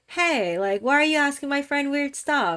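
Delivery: playful, joking voice. Retelling what a friend said to a man at a club: imitating a joking tone. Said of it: "in a very joking way".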